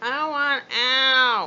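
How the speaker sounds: very loud, whiny, high-pitched, drawn-out cat voice. Voicing a cat crying to be let outside: whiny cat voice. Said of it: "annoying, whiny meow".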